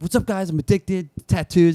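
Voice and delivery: over-the-top, try-hard guy voice, pitched high. Describing a new guy at work, the speaker acts him out: imitating an extra coworker. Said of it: "He's too extra the whole time".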